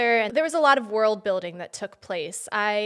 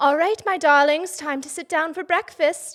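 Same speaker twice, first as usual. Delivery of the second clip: put-on British accent, pitched up; 6 semitones higher, 4 dB louder than usual. Retelling waking the kids this morning: put-on British accent. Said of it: "I just woke up in a British accent".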